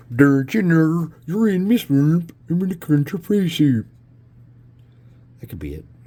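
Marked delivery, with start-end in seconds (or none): 0.1-3.8 very high, loud, slow, drawn-out swamp-creature voice. Speaker trying out the voice he pictures for a figure, swamp-dweller character voice. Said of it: "Either that or like".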